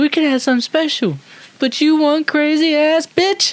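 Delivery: very high squeaky voice. Doing an impression after being asked to do one: Chris Tucker impression. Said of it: "If I did an impression of Chris Tucker".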